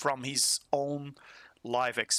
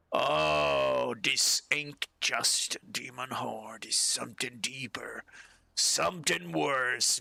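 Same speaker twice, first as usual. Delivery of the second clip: put-on drunken dwarf voice. A narrator voices a drunk dwarf at a nearby table: drunk dwarf voice. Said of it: "you hear a drunk guy".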